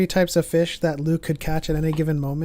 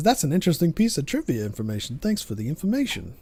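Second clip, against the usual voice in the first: put-on voice with swooping, swinging pitch; 3 dB quieter than usual. Quoting what Chris says about trivia, in a Chris impression. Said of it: "that was my impression of Chris".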